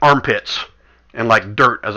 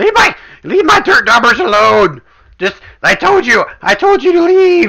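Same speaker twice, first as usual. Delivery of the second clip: very high, loud, cackling character voice; 13 semitones higher, 7 dB louder than usual. The game master voices a figure the players hear again, in a cackling voice. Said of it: "the same cackling voice".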